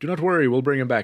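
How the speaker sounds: normal talking voice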